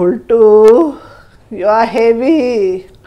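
complaining. Narrating a story, Dodla speaks to Boltu as they climb on each other: complaining. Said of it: "Dodla complains".

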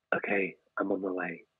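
put-on husky voice, very soft, barely audible. Describing a woman in last year's special, imitating a husky voice. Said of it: "I can do that because of my husky voice".

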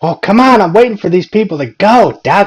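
put-on high, loud, cranky old-lady voice. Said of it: "she started getting mad".

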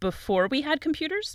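voice rising at end.

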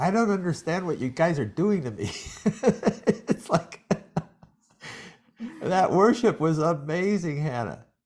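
high, tearful voice, talking through tears. Reacting to the worship that was just performed, crying while talking. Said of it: "I can't stop crying".

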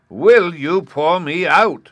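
impassioned, very loud, very slow, drawn-out cry. A voice from a crucible calls again to a man who cannot move, passionately. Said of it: "said the voice passionately".

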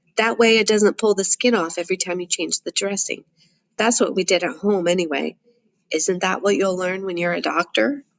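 ordinary delivery

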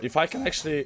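cracking, breaking voice going up high. A streamer describing their goals for growing, voice cracking mid-sentence. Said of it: "voice crack".

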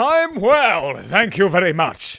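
very loud, slow, grandly theatrical delivery. Telling viewers how the speaker answers comment replies, in a dramatic voice. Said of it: "And then I say in a dramatic voice".

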